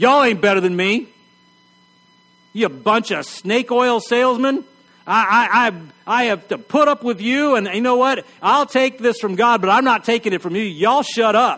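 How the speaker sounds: acted huffy, offended tirade. Retelling what Job said, mock-offended and self-righteous. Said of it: "Job said in his most offended, self-righteous tone possible".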